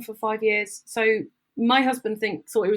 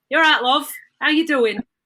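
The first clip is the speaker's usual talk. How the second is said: put-on raised, pitched-up Manchester accent, Manchester vowels; 6 semitones higher, 7 dB louder than usual. Speaker imitates how a man said to be from manchester talks, manchester accent. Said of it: "so he talks like this".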